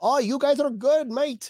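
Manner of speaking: put-on English accent, pitched very high. Joking about recruiting a third Musketeer, the speaker puts on an English accent. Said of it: "that's the English accent".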